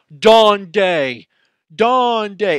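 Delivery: put-on very high, very loud, drawn-out southern accent yell. Retelling a man in south carolina walking up to a spanish speaker; imitating a southern accent. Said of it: "he has a very uh, southern accent".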